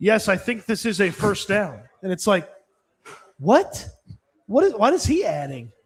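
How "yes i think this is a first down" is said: wooden, stiff, dead-level monotone. Mocking a TV rules analyst's delivery: imitating Mike Carey, stiff and monotone. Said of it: "so stiff and monotone when he would talk".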